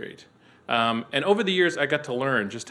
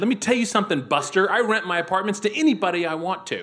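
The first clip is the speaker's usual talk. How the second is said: ear-splitting, very loud, high-pitched shout; 8 semitones higher, 4 dB louder than usual. Someone who rents out apartments recounting telling off a reporter: retelling a very loud shout. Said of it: "I said it so loud".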